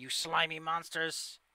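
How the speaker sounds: loud, shrieking, screaming goblin voice. Voicing goblins who warn the party away: screaming goblin voice. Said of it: "the screaming goblin voices".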